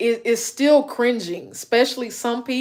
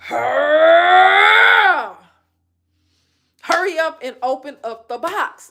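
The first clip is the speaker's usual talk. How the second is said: mock screaming, much higher pitch, slower pace; 5 semitones higher than usual. Speaker describes how she'll react during her unboxings, retelling her own screaming. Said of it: "I be screaming at the T V".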